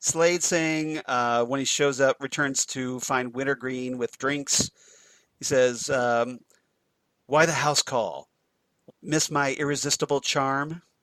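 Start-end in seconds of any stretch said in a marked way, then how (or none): 7.3-10.8 put-on flat, deadpan delivery. Recounting a favorite line from a character, retelling it deadpan. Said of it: "all deadpan".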